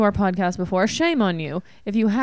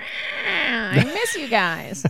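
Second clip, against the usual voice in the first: very slow, high, swooping sing-song gushing; 5 semitones higher than usual. Quoting a listener's message: imitating Christina Walkinshaw. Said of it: "If you keep doing an impression of her like that".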